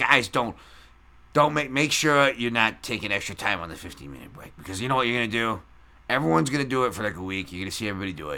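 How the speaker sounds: put-on Chicago accent. Retelling what an old construction foreman told the crew, imitating his Chicago accent. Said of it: "he had a Chicago accent".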